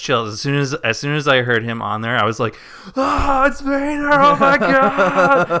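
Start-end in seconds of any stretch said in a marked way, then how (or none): 3.0-5.6 mock freak-out, very high, very slow, stretched. Retelling the moment of hearing Vader's voice, imitating own freaking out. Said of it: "Just freaking out".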